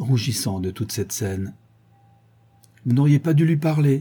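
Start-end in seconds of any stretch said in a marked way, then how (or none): 2.9-4.0 reproving, reproachful tone, pitched up. A girl reproaches a visitor after an upsetting scene: reproachful tone. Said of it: "dit-elle d'un ton de reproche".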